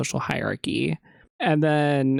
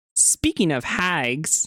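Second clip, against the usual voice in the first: forceful, cutting, aggressive, pointed delivery; 2 semitones higher than usual. Acting out Cheryl's line after being told to say it more aggressively: aggressive Cheryl line. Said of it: "You have to do it more aggressive".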